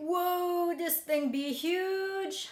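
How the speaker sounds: high, slow, drawn-out stunned exclamation. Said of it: "I was like".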